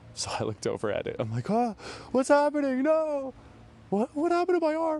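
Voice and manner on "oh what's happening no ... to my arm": mock very high, loud, frightened, panicked outburst. Retelling her own reaction when she thought her arm was losing color, reenacting scared panic. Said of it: "in addition to being scared".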